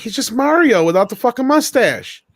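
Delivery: high, surprised exclamation. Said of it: "I'm like".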